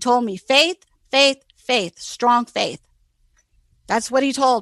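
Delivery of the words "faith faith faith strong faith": play-acted grave, clear stern man's voice, word by word. Retelling what a man's voice said: imitating a stern, clear man's voice. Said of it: "very stern, space between his words".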